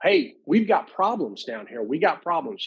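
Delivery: mock, high, urgent, screamed yell. Retelling own past warning to others: imitating own past screaming. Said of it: "And I'm screaming".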